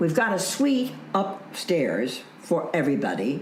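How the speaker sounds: plain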